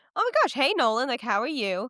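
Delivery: thrilled, excited, swooping voice. Retelling a character's surprise meeting with Nolan: imitating an excited greeting. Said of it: "and she's excited".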